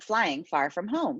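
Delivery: plain reading voice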